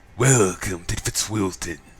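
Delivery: refined, haughty, sinister, pompous villain voice. Speaker tries a line despite performance anxiety, in a sinister, pompous, refined voice. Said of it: "sinister and you know, you know, kind of like refined prick, kind of pompous, refined prick voice".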